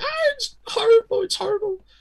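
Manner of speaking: very high, panicked, terrified screaming. Retelling running out of the room at five: imitating own past screaming. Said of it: "just screaming".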